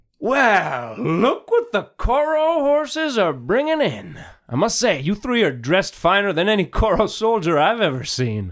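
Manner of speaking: very high, loud shout. A game narrator voices a character as three players approach, shouting down from above. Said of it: "she shouts down".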